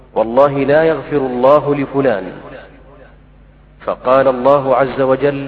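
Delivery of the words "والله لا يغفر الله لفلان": usual speaking voice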